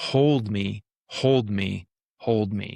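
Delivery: mock bawling, cracking voice. Retelling an emotional release while lying on the ground, retelling bawling with a cracking voice. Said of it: "my voice was cracking, and I sounded like I was 2 years old".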